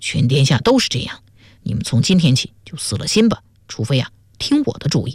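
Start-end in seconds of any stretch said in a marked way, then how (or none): none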